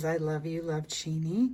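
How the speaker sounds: ordinary talk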